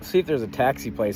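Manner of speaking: ordinary talk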